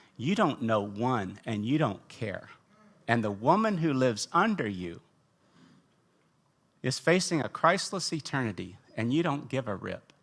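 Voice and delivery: mock whispered voice. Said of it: "in the power of a whisper".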